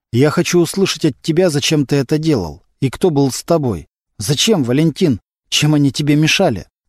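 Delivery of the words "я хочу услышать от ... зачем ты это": ordinary delivery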